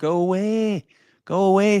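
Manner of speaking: put-on Wakefield accent. Quoting a man's reaction to a foul, imitating his Wakefield accent. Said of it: "says in his Wakey accent".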